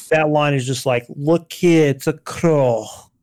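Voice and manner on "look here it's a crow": slow, put-on Scottish accent. Imitating an actor's dream one-line wildling role: imitating a Scottish accent. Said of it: "this Scottish accent".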